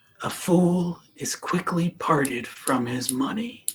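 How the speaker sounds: slow, soft, unvoiced whisper.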